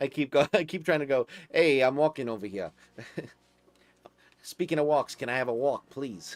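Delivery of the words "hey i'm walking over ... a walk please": put-on New York accent. Showing how he speaks for his dog, in a new york accent. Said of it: "give him a New York accent when I like speak for him".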